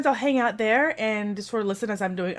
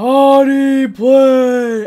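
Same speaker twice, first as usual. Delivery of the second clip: very loud, deep, booming voice-of-god delivery; 3 semitones higher, 14 dB louder than usual. Retelling a voice heard on a stream: deep booming voice. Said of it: "I hear this really deep booming".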